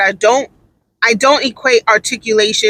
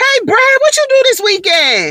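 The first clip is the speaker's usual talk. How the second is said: put-on very high, swooping sister-girl drawl; 13 semitones higher than usual. Describing a staff member's mannerisms, doing a sister girl impression. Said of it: "that's sister girl".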